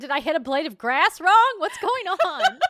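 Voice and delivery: mock furious yell, shrill, very high and very loud. Recalling getting stuck in a video game, the speaker retells past anger.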